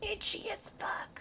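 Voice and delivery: hushed, soft, breathy whisper. Updating viewers after a red, angry morning flare-up, the speaker whispers. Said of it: "I whispered that because it's a bad word".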